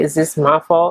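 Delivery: ordinary talk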